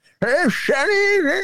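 put-on very high, elderly-sounding voice. Retelling a video, the speaker quotes a man doing an old-person accent. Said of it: "he did an old person accent".

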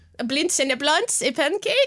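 put-on Dutch accent. Comparing a character to Goldmember, the speaker does a Goldmember Dutch accent. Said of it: "also a Dutch, Dutch accent".

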